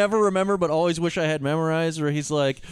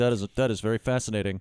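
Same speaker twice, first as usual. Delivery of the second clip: deadpan put-on voice, pitched much lower; 11 semitones lower, 4 dB quieter than usual. Recalling a favourite film character's reactions, in a deadpan Egon Spengler impression. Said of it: "He's just so deadpan".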